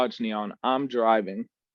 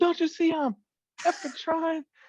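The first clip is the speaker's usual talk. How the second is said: put-on screaming, much higher pitch. Retelling a friend yelling back during an argument in the car, retelling a scream. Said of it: "we're screaming at each other".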